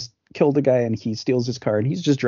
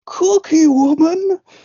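very high, shrill, loud dramatic yell; 7 dB louder than usual. Comparing two movies, quoting an actor's line: imitating Donald Pleasence's dramatic yell. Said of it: "dramatically s-, yells at one point".

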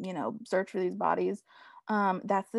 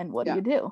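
put-on sassy attitude. Retelling a character's questions to another character: imitating a sassy tone. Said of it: "being ever so sassy".

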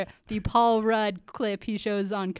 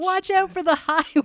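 play-acted, high, raised hollering yell; 9 semitones higher, 6 dB louder than usual. Retelling a film scene where someone shouts a warning: imitating someone yelling. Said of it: "Laura's yelling".

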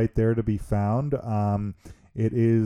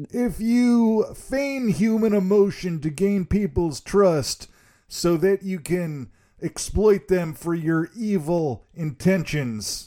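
bad, botched fake Southern accent, pitched high; 9 semitones higher than usual. Asked to deliver the routine's line, speaker gives a failed Southern accent attempt. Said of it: "That was that was not a Southern accent".

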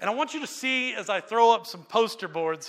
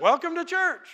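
bright, upbeat, positive, warm tone, pitched up; 9 semitones higher than usual. Speaker shows listeners how a welcome should sound: positive tone. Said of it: "That was my best positive".

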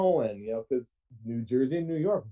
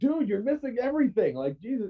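acted-out high, frustrated, exasperated scream; 8 semitones higher than usual. Retelling a friend yelling at the driver over missed exits: imitating someone screaming. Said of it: "Mikey is in the front seat screaming at him".

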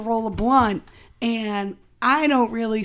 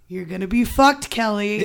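ordinary talk, nothing marked

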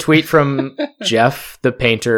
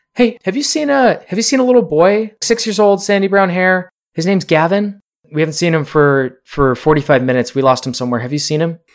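frantic, raised, high voice calling out; 6 semitones higher than usual. Adults running up to ask a stranger about a missing little boy, raised calling voice. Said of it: "calling out in a a raised voice".

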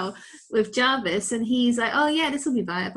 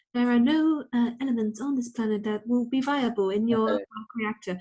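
mechanical machine voice. Retelling a scene, the speaker quotes the AI in a Jarvis robot voice. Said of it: "I'm doing the robot voice".

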